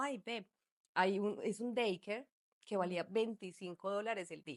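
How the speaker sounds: ordinary talk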